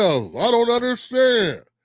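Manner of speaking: slow, put-on confused, playing-dumb tone. Mocking people online who pretend not to understand: imitating feigned confusion. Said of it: "they pretend not to understand".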